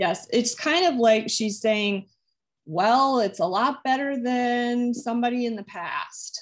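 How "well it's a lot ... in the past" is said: teasing, joking, lightly sarcastic tone. Relaying what she says about a new person, imitating joking sarcasm. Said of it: "she's kind of joking and a little sarcastic".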